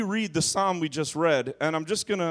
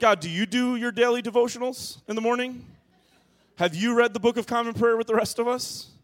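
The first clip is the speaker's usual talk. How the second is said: play-acted snarky needling, pitched up; 6 semitones higher than usual. Retelling own thoughts about untimely deaths: retelling a sarcastic question. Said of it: "you can start to be sarcastic with God".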